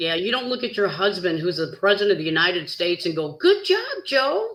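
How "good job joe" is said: put-on very high-pitched little-baby talk. Mocking how a wife talks to her husband, the president, in mock baby talk. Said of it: "talking like a little baby".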